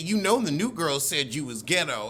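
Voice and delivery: ordinary talk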